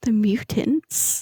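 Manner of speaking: secretive, conspiratorial whispered aside. Describing a character who leans in to tell you, conspiratorial whisper. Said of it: "he whispers conspiratorially to you".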